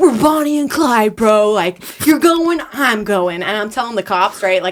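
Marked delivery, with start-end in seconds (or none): 0.0-3.4 mock wild, crazed, slow, drunken yelling. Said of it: "yelling at the cops like a total psychopath".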